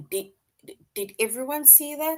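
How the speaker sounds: stuttering. Showing how a repeated word in dialogue sounds: stuttering. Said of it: "That means that somebody is stuttering".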